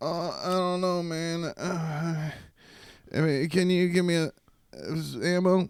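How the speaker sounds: put-on very slow, stoned voice on the verge of crying. Speaker imitating a gamer asking for ammo in a shooter: imitating a stoned gamer near tears. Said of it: "you sound like you're about to cry".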